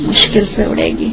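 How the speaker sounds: whispered voice.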